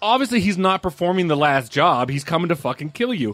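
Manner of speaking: normal talking voice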